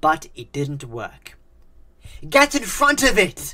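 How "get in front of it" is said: very high, shrill, loud scream. Narrator reads Isaac's line to Oscar, screaming. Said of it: "Screamed Isaac".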